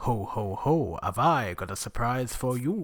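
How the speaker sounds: yeti monster voice. Imagining what a Christmas Yeti might say: Christmas Yeti voice. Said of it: "More impressions".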